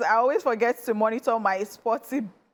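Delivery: normal talking voice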